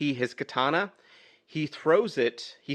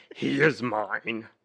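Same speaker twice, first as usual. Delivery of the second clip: put-on voice drifting toward a puppet bear; 2 semitones lower than usual. Retelling a film scene as the Kurgan, slipping into Fozzie Bear voice. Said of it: "you're going a little Fozzie there".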